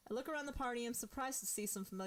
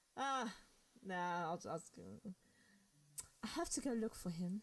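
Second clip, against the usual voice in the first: put-on drunk girl voice, lower, slower; 4 semitones lower than usual. Acting out a scene, a woman answers a man's question, drunk girl voice. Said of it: "kind of want to stick with the drunk girl voice".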